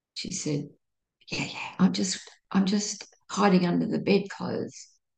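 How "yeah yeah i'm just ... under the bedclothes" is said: imitated whisper, higher. Retelling a late-night phone call from a woman: imitating someone whispering.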